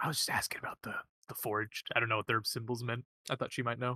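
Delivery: whispered. Answering a question so the forged nearby don't hear, in a whisper. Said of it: "I do this in a whisper".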